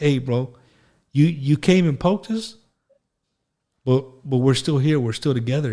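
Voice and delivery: choked up, voice catching with emotion. Talking about national pride after nine eleven, choked up with emotion. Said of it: "I'm getting choked up just thinking about it".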